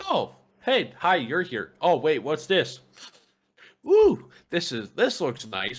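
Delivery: chatty, swooping, sing-song hamster voice. Retelling a pet hamster sniffing a face in a bag: voicing the pet hamster. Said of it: "she's like".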